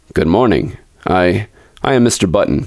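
ordinary delivery

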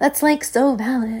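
put-on high, gushing Valley girl voice. Mocking her own way of talking by repeating her phrase in a valley girl voice. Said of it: "sounding like a Valley girl on here sometimes".

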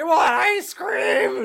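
very high, stretched-out scream, acted out. Retelling a movie scene where a zombie ice cream man lunges in: imitating someone screaming. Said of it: "he's just screaming".

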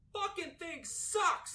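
faint, hushed, frustrated whispered rant, far from mic. Ranting at a faulty connection during a recording: frustrated off-mic rant. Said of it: "a mostly off-mic rant".

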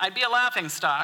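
ordinary delivery, nothing marked

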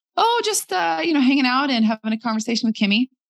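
high, fake breezy voice.

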